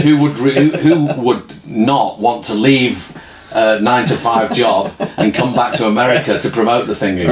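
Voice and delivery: ordinary talk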